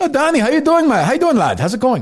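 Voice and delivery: very high, bad put-on Irish accent. Greeting someone on the show, in a bad Irish accent. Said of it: "I confess my accent's not the best".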